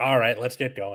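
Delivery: low, irritated, exhausted teacher voice. Showing what their teacher voice is like: annoyed and exhausted. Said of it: "just kind of annoyed and exhausted".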